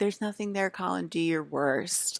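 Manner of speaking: nasty, angry, mean sneering tone. Imitating a woman's hostile line to colin: imitating an angry, mean voice. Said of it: "completely negative and completely angry and mean".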